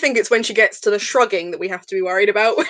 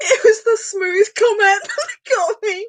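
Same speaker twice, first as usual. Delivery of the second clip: crying with laughter, higher; 11 semitones higher than usual. Explaining which comment set off the laughter, crying with laughter. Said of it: "I'm really tearing up now".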